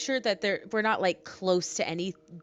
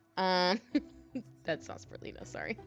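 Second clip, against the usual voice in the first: usual speaking voice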